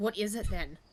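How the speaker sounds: hushed whisper. A player's character turns to a companion to ask something, whispering. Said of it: "turn and whisper to him".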